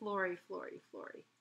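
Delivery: ordinary delivery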